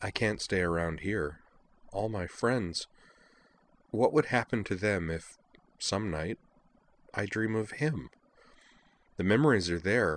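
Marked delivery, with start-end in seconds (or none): none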